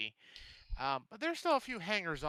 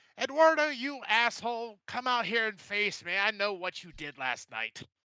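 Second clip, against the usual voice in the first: high, loud yelling through a primitive megaphone; 6 semitones higher, 5 dB louder than usual. Rico addresses Eduardo, Rico yelling through a horn. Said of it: "he yells out into there".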